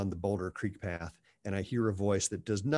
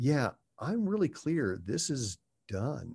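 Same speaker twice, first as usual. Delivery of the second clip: very calm delivery, slightly pitched up; 5 semitones higher than usual. Recounting what the speaker said to a man, retelling saying it calmly. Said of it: "I said very calmly".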